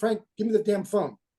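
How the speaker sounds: plain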